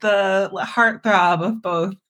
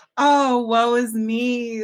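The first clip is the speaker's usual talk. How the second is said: fake lament, dragged out very slowly; 4 semitones higher than usual. Retelling how the dad hints about a plumbing issue: imitating the dad's fake woe. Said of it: "So he's just like".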